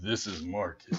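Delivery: dead-serious, put-on, low, hushed voice. Recalling talking on the chirp with friends; mock serious voice. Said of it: "doing a whole serious voice".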